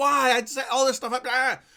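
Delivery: put-on high, exasperated, fed-up screaming outcry. Retelling a reaction to XSplit not showing the game: retelling own screaming. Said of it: "I'm screaming at the top of my lungs".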